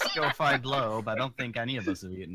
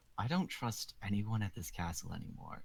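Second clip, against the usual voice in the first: secretive, hushed whisper; 7 dB quieter than usual. Player leaning in toward the rest of the party, whispering. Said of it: "lean into the party and whisper".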